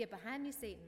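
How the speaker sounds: put-on words shaped by Southern accent. The speaker imitates Becky turning down offered chocolate, Becky's southern accent. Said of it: "in her southern accent".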